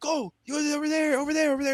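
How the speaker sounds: play-acted shrill, very high-pitched screaming. Retelling how a player talks to teammates on court: imitating Yang Hansen screaming. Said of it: "he's just screaming".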